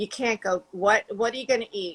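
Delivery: put-on mom voice with New Jersey accent and vowels. Retelling your mother's reaction to you going vegan, in a new jersey accent. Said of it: "in her New Jersey accent".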